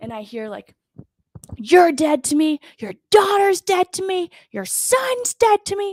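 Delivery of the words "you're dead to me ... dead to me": very high-pitched, loud screaming. Retelling a stranger overheard on the phone while shopping, retelling a man screaming. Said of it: "He's screaming".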